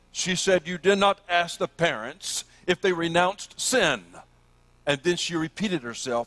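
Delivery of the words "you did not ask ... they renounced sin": put-on sharp, stern scolding voice. Retelling what a professor said to the speaker after everyone left: retelling a scolding. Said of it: "in a scolding voice".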